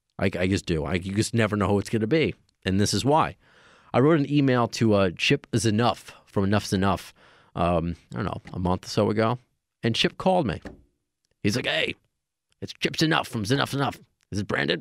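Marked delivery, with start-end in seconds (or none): 11.7-14.8 deliberately terrible rough-edged creaky voice. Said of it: "That's my terrible [name] impression".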